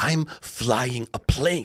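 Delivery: put-on aggressive tone. Retelling how the co-pilot snapped back: imitating an aggressive reply.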